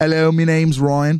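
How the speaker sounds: mock English accent, put-on British accent. Show hosts trying out British accents; one introduces himself in a put-on British accent. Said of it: "my British accent".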